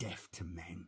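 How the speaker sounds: low, menacing, venomous hiss. Reading a story, the narrator gives a character's words to anyone listening: hissed. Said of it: "he hissed to anyone who could hear".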